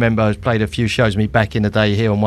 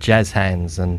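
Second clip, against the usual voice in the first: ordinary talk, nothing marked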